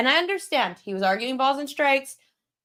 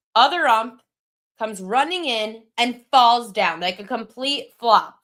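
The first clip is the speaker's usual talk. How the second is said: usual speaking voice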